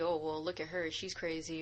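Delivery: ordinary delivery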